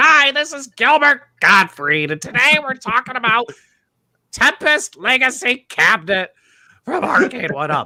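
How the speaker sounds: loud, slow delivery, every word drawn out. Imagining a retro gaming YouTube intro: Gilbert Gottfried impression. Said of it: "he talks really slow. Loud but slow".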